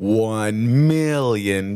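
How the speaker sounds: scheming, sinister villain character voice. Naming the amount they would ask for, in a Dr. Evil voice. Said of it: "in my Dr. Evil voice".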